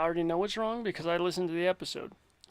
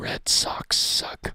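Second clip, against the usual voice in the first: mock mutter under the breath, slower. Recalling a favorite moment from Andy, Andy muttering under his breath. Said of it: "under his breath he was like".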